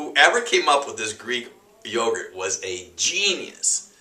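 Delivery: thick, knowing, heavy sarcasm, swooping. Answering a question about Greek yogurt: really sarcastic. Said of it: "I'm being really sarcastic right now".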